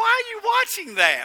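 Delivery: high-pitched falsetto voice. Retelling what Sharon asked while the game was on: Sharon voice. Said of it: "I have a Sharon voice doing that".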